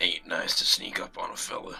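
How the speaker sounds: deep, low, barely whispered mutter. Voicing a masked figure standing by the fire, muttering to himself: Knox's deep mutter. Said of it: "Knox mutters to himself in a deep voice".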